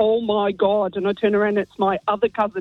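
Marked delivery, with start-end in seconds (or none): 0.0-1.0 thick Derry accent, imitated. Retelling a cousin's greeting heard in a pub bathroom: thick Derry accent. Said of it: "in a really thick Derry accent".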